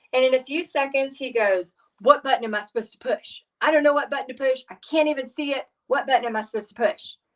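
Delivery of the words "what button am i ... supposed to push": annoyed, cranky, grumpy, irritated griping. Retelling a customer talking to a woman, imitating a grumpy man. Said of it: "you could tell he was very grumpy".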